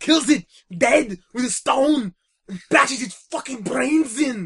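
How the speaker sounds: very high, very loud put-on Austrian accent. Speaker repeats a line with the requested Austrian accent. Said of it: "Could you have a slightly more Austrian accent?".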